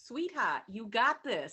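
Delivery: put-on very loud, heavy, thick Boston accent. Voicing what she would say to all of us in this moment, thick Boston accent. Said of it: "She had a very thick Boston accent".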